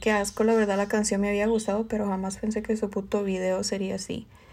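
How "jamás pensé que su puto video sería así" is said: ordinary talk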